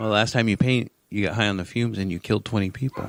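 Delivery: flat, expressionless mock kid voice. Retelling what a kid said while painting: imitating Brody, dead serious. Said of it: "Dead serious".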